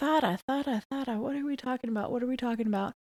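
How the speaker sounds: fast, quiet, confused, panicked muttering.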